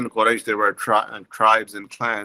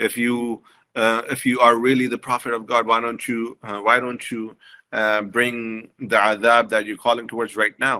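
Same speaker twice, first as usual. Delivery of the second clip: normal talking voice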